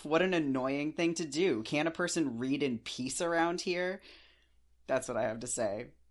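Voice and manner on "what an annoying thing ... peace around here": loud, high, laughing, incredibly sarcastic delivery. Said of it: "please hear this as incredibly sarcastic".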